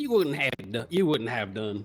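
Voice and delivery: put-on quick Southern US accent. Voicing a game character's reply in a southern accent. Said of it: "in the fucking southern accent".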